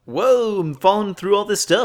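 silly, very high, loud cartoon voice. Describing a cartoon scene where characters fall down a drain, in a put-on cartoon voice. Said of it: "I love it when you do that voice".

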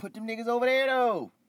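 shrill, very high, loud yelling. Insisting again to another speaker where to put the tag team: yelling. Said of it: "Why you yelling at me?".

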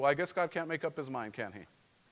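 affectionate, gently sarcastic tone. Retelling a reply to a churchgoer changing plans: imitating own sarcastic reply. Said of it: "in my very loving and sarcastic way".

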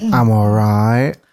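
put-on sheepish voice. Imitating how another speaker just answered a greeting: imitating a sheepish reply. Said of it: "She kind of said, like".

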